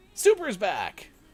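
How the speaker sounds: very high announcer voice. On a stream, telling the chat that someone is back, in an announcer voice. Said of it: "Why do I have my announcer voice?".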